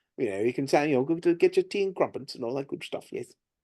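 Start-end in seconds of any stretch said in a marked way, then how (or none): 1.0-3.1 upper-crust British accent, quieter. Showing accents one can do, giving an example phrase, British upper crust accent. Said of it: "you can do the British upper crust accent too".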